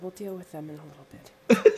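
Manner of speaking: hushed, whispering character voice. Playing a character near sleeping goblins, whispering to close the door. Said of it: "And I just whisper".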